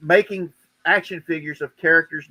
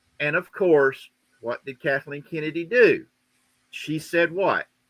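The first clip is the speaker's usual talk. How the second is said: usual speaking voice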